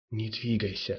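plain

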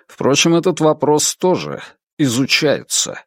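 ordinary delivery

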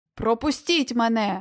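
barked delivery. Narrator reads a brave lion answering a growling beast in a cave; barked. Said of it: "гаркнув лев".

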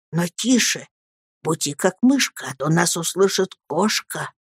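ordinary delivery, nothing marked

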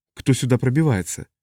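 ordinary delivery

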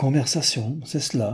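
murmuring. Noémie catches a word from Newman's conversation and repeats it, murmured. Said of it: "murmura Noémie".

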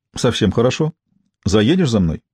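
plain

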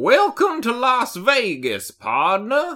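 loud, very high, swooping, happy cowboy voice. Imagining a voiced las vegas welcome sign: happy cowboy voice. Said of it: "a happy cowboy being like".

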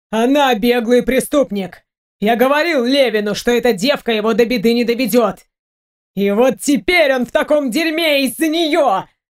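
gasping for air, shouting, yelling, gulping air. Podolsky, thrown aside by Mick, yells back at him; gasping for air, shouting. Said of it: "Судорожно хватая воздух ртом, кричал Подольский".

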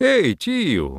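high-pitched, loud shouting voice, calling out. Narrator reads Nakti calling his slave Tiyu from deep in the house, calling out. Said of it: "крикнул в глубину дома".

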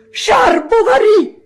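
whole-chest cry, very shrill, very loud, high. Narrator reads the new boy, urged by the teacher, shouting at the top of his lungs. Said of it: "a pieni polmoni".

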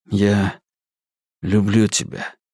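gentle, hushed, quiet, soft-spoken. Narrator reads a man's words to the woman he is talking with: quiet. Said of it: "тихо сказал".

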